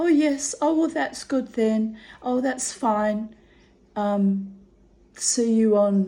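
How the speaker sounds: put-on sunny, cheerful tone, bright and drawn out. Retelling how a receptionist answered: imitating a bright cheerful tone. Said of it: "she said to me very brightly".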